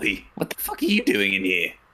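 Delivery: small goblin voice with swooping pitch. Voicing a goblin chef who catches a player in the kitchen: goblin chef voice. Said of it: "a small goblin man with a chef's hat on saying".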